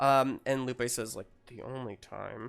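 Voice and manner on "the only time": muttered under the breath, lower and quieter. Voicing a mother who worries about a toothbrush: muttered under her breath. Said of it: "under her breath".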